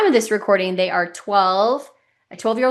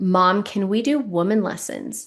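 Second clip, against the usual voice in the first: put-on sweet voice of a young child. A mother retells her nine-year-old Quinn asking her something, imitating Quinn speaking sweetly. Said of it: "said so sweetly to me".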